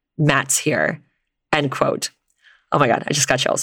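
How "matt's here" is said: put-on deadpan, dry, utterly matter-of-fact, zero emotion. Telling a creepy story, quoting what she said mid-conversation, imitating a deadpan remark. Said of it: "in the most deadpan voice".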